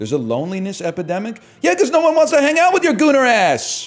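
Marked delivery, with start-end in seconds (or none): 1.6-3.9 very high, loud, rapid excitable ranting. Teasing the other person during banter, in a Kevin Hart voice. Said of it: "trying to say it in like a Kevin Hart voice".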